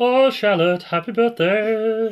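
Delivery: very high-pitched, very loud put-on voice. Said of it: "Can we have that in a [name] voice?".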